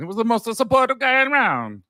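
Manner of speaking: very high, put-on Italian accent. Speaker redoes his last line for the other speaker, in a put-on Italian accent. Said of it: "I was going after my Italian accent".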